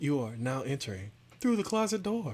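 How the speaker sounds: put-on woman's voice. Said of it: "like a woman's voice saying".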